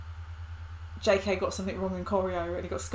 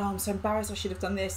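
ordinary talk, nothing marked

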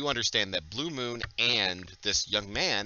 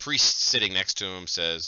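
ordinary delivery, nothing marked

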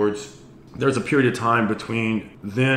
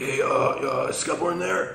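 shady, sketchy, high-pitched, slow and drawn-out voice; 5 semitones higher than usual. Retelling a phone call where the caller asks for Scott Bourne: sketchy Jason Jessee voice. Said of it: "it was like the sketchiest voice ever".

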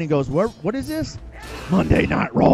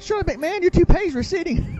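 put-on wrestling commentator voice, higher; 13 semitones higher than usual. Retelling a commentator mocking McMahon: Jerry Lawler impression. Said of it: "And the king".

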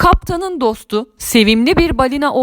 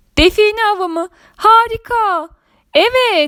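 thrilled, delighted, high, excited exclaiming; 8 semitones higher than usual. The narrator answers the pirate captain's treasure-hunt invitation, excited. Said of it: "dedim heyecanla".

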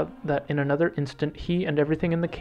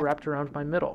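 plain reading voice

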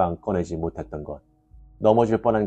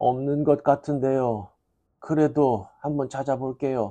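embarrassed, flustered, apologetic, higher pitch; 7 semitones higher than usual. Narrator reading an old woman's reply to a glaring bus driver, embarrassed and flustered. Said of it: "부인의 얼굴이 더욱 붉어졌다".

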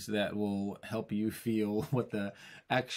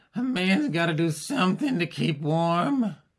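play-acted boozy, very slow, loud, drawn-out drawl; 8 semitones higher, 8 dB louder than usual. Imitating a man who had too much whiskey at the parade, imitating a drunk man. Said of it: "he's had too much whiskey at the beginning of the parade".

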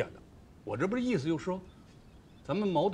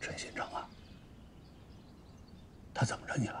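hushed, low whisper. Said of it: "你还让我大声嚷吗".

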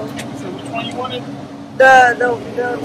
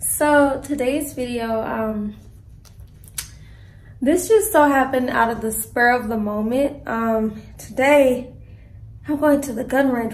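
out of breath, short of breath, winded; 3 dB quieter than usual. Vlogger opening today's video to viewers, out of breath. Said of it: "Why am I so out of breath?".

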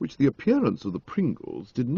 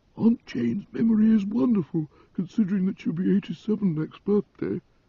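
mournful, proud whisper, much higher pitch; 8 semitones higher than usual. Narrator reads a woman whispering about an elderly aunt, whispered with mournful pride. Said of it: "whispered Mrs. Pringle with mournful pride".

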